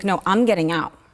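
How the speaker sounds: put-on angry tone. Retelling what he said on a Zoom call from jail: imitating someone angry. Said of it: "I could just hear the anger".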